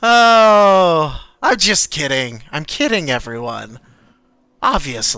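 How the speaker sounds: slow, weird, villainous laugh through the words. Voicing a villain laughing while holding a Gatling gun: weirdly villainous laughing voice. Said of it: "a very, like, weirdly villainous laugh".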